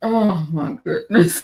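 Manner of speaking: talking through laughter. Reacting to church drama, laughing while talking. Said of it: "makes me laugh like this".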